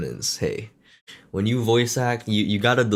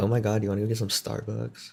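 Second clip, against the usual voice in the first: put-on California Valley Girl accent; 5 dB quieter than usual. Repeating what was said last time in a Valley Girl voice. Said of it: "my Valley Girl".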